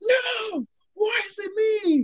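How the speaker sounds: very high, very slow, acted-out scream. Retelling a scene they heard, imitating Harvey Dent screaming. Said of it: "You can hear Harvey Dent screaming".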